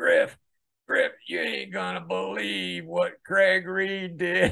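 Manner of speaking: rough, rasping, throaty voice. Retelling a morning phone call, the speaker quotes the caller, imitating Joe Crimp's raspy voice. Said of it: "he's got this raspy voice".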